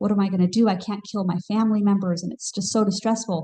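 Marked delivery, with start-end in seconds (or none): none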